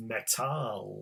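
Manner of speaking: Metall with German stress on second syllable -tall. Explaining German word stress for translating a poem: stress on "-tall" in Metall. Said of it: "In German, the stress comes on the second syllable".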